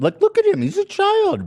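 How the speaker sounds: put-on high, loud, horrified squeal.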